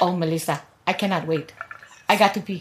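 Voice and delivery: put-on low, soft Filipino accent drifting toward Indian. Retelling a road trip, quoting her mother in an attempted filipino accent. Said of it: "Why does our mother sound like she's Indian or something?".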